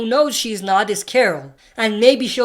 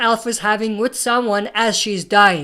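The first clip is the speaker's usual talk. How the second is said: usual speaking voice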